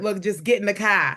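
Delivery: rough, badly done, not-quite-right Chicago accent. Joking with a guest at the end, bad Chicago accent. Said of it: "That's my Chicago accent".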